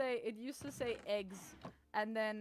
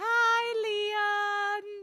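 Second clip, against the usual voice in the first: shrill, very loud, high-pitched shout; 12 semitones higher, 10 dB louder than usual. Retelling what someone just yelled at Leon: imitating someone yelling. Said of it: "he just yelled".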